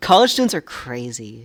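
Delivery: booming very loud outburst. Talking to viewers about college students, raised voice. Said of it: "raise my voice a little bit there".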